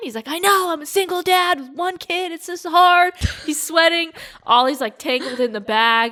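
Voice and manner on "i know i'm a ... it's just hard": mock exasperated, high, harried yell. Retelling a stressed dad at airport security: imitating a dad yelling.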